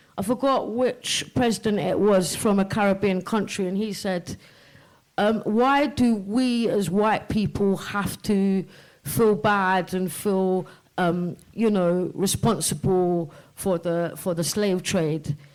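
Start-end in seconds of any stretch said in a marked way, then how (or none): none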